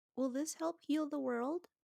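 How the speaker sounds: very quiet hushed voice, pitch lifting. Narrating a woman asking the matriarch a question, in a very quiet voice. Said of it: "she goes in a in a very quiet voice".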